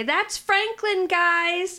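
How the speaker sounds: yelling from a distance. In a played-out scene, calling to the guys from the back, yelling from the back. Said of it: "I'm going to yell out from the back".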